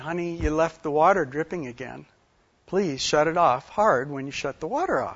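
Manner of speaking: play-acted soft, sweet, honeyed, gentle voice. Recounting what he said to her back then, retelling a sweet voice. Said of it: "I said in a sweet voice".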